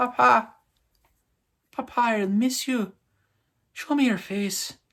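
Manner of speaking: very high, drawn-out put-on Irish lilt. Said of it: "I don't know why I threw in an Irish accent".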